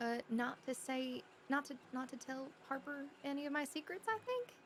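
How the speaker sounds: hushed, very quiet, dropped-down voice. Telling another speaker what they were told earlier, lowered voice. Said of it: "let me lower my voice".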